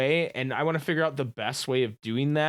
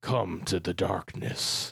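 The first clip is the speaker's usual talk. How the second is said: very low, deep, slow, scratchy, sinister villain voice; 8 semitones lower, 4 dB quieter than usual. Doing a voice the other speaker praised, scratchy voice. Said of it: "my voice is like kind of like scratchy right now".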